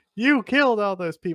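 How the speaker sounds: play-acted accusing yell, high but held back. Retelling how someone came in and accused him: imitating someone yelling. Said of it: "P S L definitely starts yelling at him".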